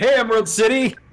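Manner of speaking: put-on DJ-style radio announcer voice. Testing a microphone after being told they sound like a radio dj, radio dj voice. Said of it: "It's my radio D J".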